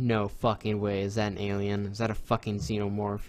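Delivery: ordinary talk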